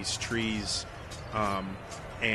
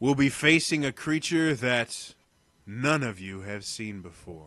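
showman's arena announcer delivery; 4 dB louder than usual. Narrating the story, the announcer addresses the contestants: arena announcer voice. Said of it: "the familiar voice of the announcer goes".

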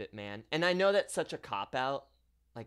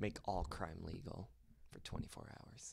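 creepy, low, much softer murmur. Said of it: "You say that so creepily".

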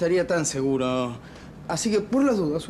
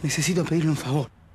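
secretive, confiding tone; 3 semitones lower than usual. On the phone, keeping it low so another person won't overhear, speaking softly. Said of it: "Le hablo bajito".

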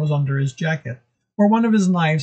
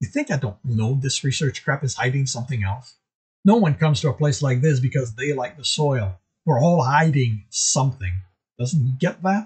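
ordinary delivery, nothing marked

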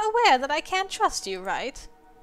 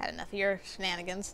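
usual speaking voice

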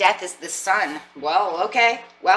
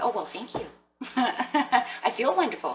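put-on sassy tone, soft and drawn out; 5 semitones higher, 5 dB quieter than usual. Acting out someone thanking a compliment, getting a little sassy. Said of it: "getting a little sassy".

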